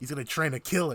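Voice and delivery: ordinary talk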